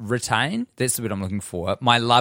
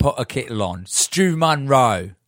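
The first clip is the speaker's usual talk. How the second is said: attempted British accent; 3 semitones higher, 4 dB louder than usual. Saying someone's name on request, in their best British accent. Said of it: "Say my name in your best British accents".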